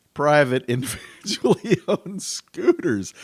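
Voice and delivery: laughing through the words. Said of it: "I'm sorry for laughing".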